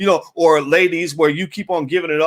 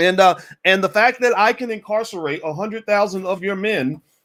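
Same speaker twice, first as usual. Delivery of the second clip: plain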